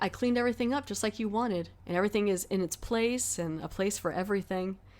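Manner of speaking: usual speaking voice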